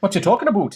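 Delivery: far-north Canadian twang. Joking about Minnesotans sounding Canadian: Canadian accent. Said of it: "That's my best Canadian accent yet".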